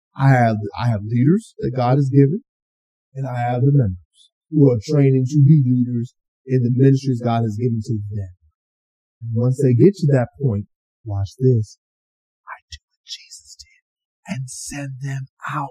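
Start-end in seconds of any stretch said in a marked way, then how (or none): 11.1-15.7 hushed, slow, drawn-out, preachy whisper. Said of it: "I did the whisper voice on it".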